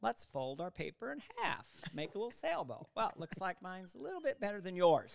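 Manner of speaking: condescending, patronizing, sing-song schoolteacher voice. Playing a schoolteacher folding paper: imitating a condescending teacher. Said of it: "any condescending teacher you ever had".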